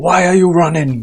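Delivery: clumsy put-on Nigerian accent. Speaker trying out an accent mid-commentary, in a bad Nigerian accent. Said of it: "That is probably the worst Nigerian accent I've ever done".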